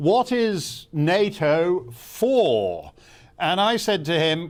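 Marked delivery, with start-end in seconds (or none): 0.0-2.9 very slow, lazy, swooping drawl, for stretched long. Retelling a lunch remark over the soup: Lord Carrington's drawl. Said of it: "he drawled at me in that wonderful drawl of his".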